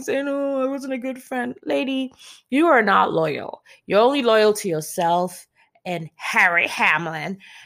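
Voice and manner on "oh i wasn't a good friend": high, weepy, mock tearful crying voice. Recounting a reality-show moment, mock-crying as Lisa Rinna. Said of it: "And then she's crying".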